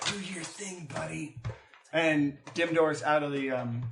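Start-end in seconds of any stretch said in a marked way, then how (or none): 0.1-1.4 soft, barely audible half-whisper. Voicing a character who half-whispers to his cape: half-whispering to a cape. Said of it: "Dolus whispers to his cape".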